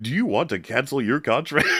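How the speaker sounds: high, automated phone-line robot voice. Retelling a call to cancel a contract, quoting the automated line, robot phone voice. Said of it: "I'm not using that voice for any particular reason".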